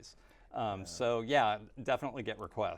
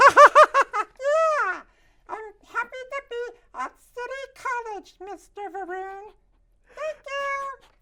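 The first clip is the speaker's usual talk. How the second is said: fuzzy, very high, very loud joyful puppet voice; 15 dB louder than usual. Speaking to Mister Varun at City College, in a joyful character voice. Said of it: "a red, fuzzy, full of joy".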